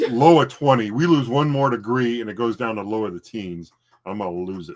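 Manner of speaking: ordinary talk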